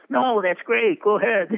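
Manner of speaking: put-on high, loud German accent. Retelling a director's reply about slipping out photos: imitating Billy Wilder's German accent. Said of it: "in that German accent of his".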